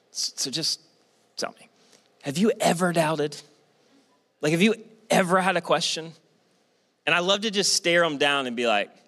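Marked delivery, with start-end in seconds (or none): 0.1-6.1 secretive, confiding, conspiratorial stage whisper. Retelling how people pull a pastor aside: imitating a half-whispered question. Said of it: "whisper in".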